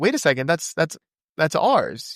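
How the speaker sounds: usual speaking voice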